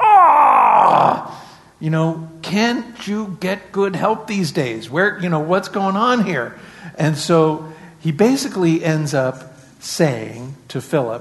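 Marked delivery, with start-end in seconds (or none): 0.0-6.6 exasperated, through gritted teeth, pitched up. A speaker imagines Jesus reacting to Philip, speaking through gritted teeth. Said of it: "saying through gritted teeth".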